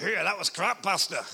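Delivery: put-on Glaswegian accent. A pastor retells one listener's remark after his sermon, in a glaswegian accent. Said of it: "in a Glaswegian voice".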